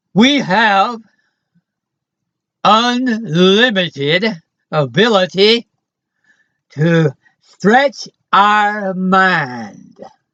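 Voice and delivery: lazy Texas drawl with "mind" drawn out. Giving the audience another item of news: Texas drawl. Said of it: "gonna speak to you in Texas drawl".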